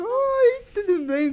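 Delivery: put-on childish, high, weepy voice like a five-year-old. Showing how she greets people in a child's voice: childlike voice. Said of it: "daquela voz de criança".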